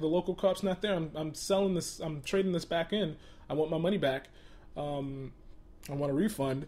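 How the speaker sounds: plain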